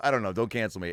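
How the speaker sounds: ordinary talk, nothing marked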